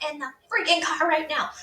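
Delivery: acted-out frantic, shrill yelling, very high. Retelling yelling at a child on the front lawn: imitating her own yell. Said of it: "I'm yelling, losing my mind".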